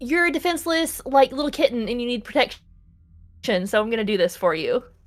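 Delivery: grudging, put-upon yet protective tone. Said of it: "she's also like".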